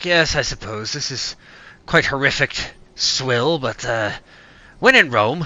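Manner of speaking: gruff grunting character voice. Voicing a character who grunts an answer about drinking ale: Dexter grunting a reply. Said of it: "Dexter grunts".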